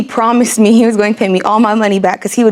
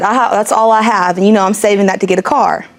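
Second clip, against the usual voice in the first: plain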